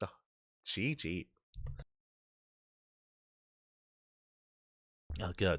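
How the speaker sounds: choking while talking. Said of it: "I'm just choking on myself".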